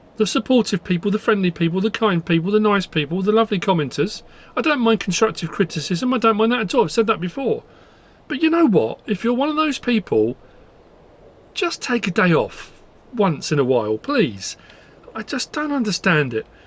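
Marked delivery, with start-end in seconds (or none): 8.3-16.5 frustrated, exasperated, angry swooping rant. Telling unkind commenters to take a day off: angry. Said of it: "can you tell I'm angry?".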